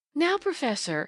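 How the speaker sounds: coquettish tone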